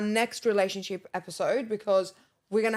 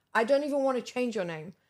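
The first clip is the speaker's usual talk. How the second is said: ordinary talk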